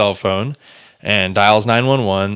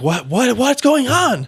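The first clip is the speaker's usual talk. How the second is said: put-on yell. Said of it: "just yelling up".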